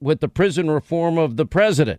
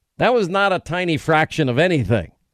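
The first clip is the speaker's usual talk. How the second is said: ordinary delivery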